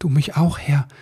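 a bit embarrassed. The elf replies to the man he collided with, a bit embarrassed. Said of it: "sagte Ribbelwitsch ein wenig verlegen".

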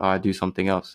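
mock mumbling under breath. Retelling own reply to a question at work, imitating muttering under breath. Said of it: "I muttered".

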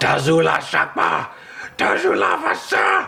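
high, rough screeched gibberish. Voicing a small Hell Knight creature as it charges to attack, screeching in an unknown language. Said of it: "It screeches in an unknown language".

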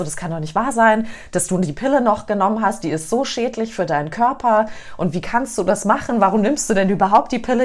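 plain

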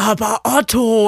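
put-on deep cartoon elephant voice. Quoting the cartoon elephant complaining to Otto: Benjamin Blümchen voice. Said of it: "ich kann's nicht so gut nachmachen".

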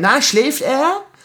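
put-on, very high half-shout. Recounting a male nurse who came by and shouted at them, retelling his sort-of shout. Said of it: "schreit mich quasi an".

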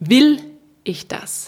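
"will" emphasised, rest kept plain. Looking at a question from different angles: stress on Will. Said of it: "der den Fokus auf das erste Wort legt, auf Ihren eigenen Willen".

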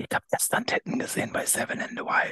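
hushed whisper right into the mic. Last words with a spoiler, leaning close to the camera, close-up whisper. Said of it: "als würde ich so flüstern".

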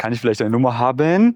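timid rise in pitch, climbing on haben. Showing how asking for a number should never sound: rising pitch on haben. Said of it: "Es darf sich also niemals so anhören von wegen".

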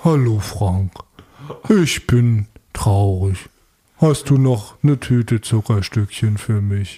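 very deep, very slow, dopey, dim-sounding voice. Doing an impression of Benjamin Blümchen: Benjamin Blümchen voice, deep, slow. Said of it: "ich spreche mal ganz tief, ganz langsam. Ein bisschen debil".

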